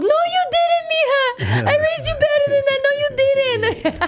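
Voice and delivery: very high, appalled, horrified disbelief. Retelling her mom's reaction to an embarrassing introduction: imitating her horrified mom.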